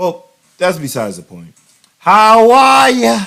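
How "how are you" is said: very loud, very high put-on Boston accent. Greeting the audience to show off a Boston accent. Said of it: "That's some Boston accent for y'all".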